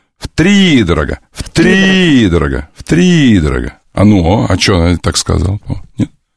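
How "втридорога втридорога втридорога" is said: втридорога drawn out slowly to bring out stress. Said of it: "ударение в слове".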